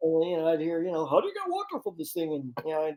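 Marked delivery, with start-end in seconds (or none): 1.1-2.3 squeaky character voice, very high pitch. Retelling hearing a recorded mistake played back: Ed voice. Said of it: "he doesn't sound like Ed".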